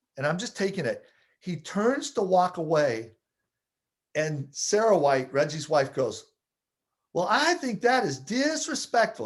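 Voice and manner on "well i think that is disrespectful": put-on reproachful tone, Southern accent, pitched high. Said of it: "She's from the South".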